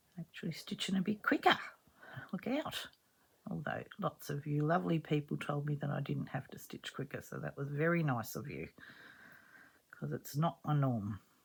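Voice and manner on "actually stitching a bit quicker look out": hurried, hushed, breathy, almost whispered. Stitching on camera a bit quicker than usual, telling viewers, rushed voice. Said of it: "I'm feeling like I'm rushing. It's in my voice".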